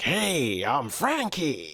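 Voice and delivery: put-on strong, swooping American accent. Describing how a character suits their accent: Frankie's loud American accent. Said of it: "a very strong American accent. It's very like loud and proud".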